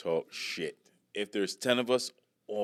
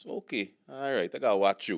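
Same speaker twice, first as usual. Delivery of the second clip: deadpan, flat delivery. Retelling what a Guyanese security guard at the store said: deadpan delivery. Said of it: "that was so deadpan".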